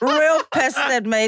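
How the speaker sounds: laughing hard while speaking.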